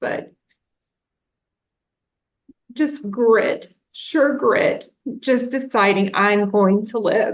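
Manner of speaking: on the verge of tears. Talking with another speaker about going through a trauma: tearing up. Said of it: "I don't know why I'm tearing up".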